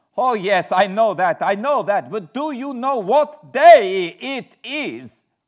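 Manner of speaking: very high, very loud, shrill, drawn-out hysteria. A narrator reads an old woman's words to him in his room, hysterical and excited. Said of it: "I faced a cheery-looking elderly woman in the usual peasant dress, ... the old lady came up to my room and said in a very hysterical way, ... She was in such an excited state that she seemed to have lost her grip of what German she knew and mixed it all up with some other language which I did not kn".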